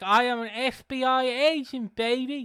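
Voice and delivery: loud lisping voice, words dragged out very slowly. Recalling a clip of a wrestler doing a Dusty Rhodes impression: Dusty Rhodes impression with a lisp. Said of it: "the John Moxley doing the Dusty Rhodes impression".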